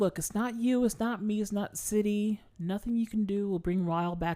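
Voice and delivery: mock, earnest pleading delivery. Recapping a show, acting out a character pleading. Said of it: "because she's like pleading".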